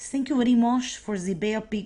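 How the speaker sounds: put-on English spoken loud in a Cuban accent. Quoting Che Guevara to a Kennedy administration advisor, do Che Guevara in a Cuban accent. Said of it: "that's a Cuban accent".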